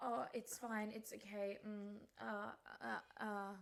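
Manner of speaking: put-on vacant, halting, soft, very slow dazed mumble. Retelling a phone call, imitating the other speaker: imitating someone dazed and halting. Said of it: "That's exactly what you sounded like".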